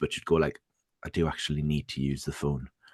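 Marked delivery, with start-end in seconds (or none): 1.0-2.7 soft, patient, polite motherly voice. Retelling what his mum would say while he was online: imitating patient mum. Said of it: "my mum would be very patient".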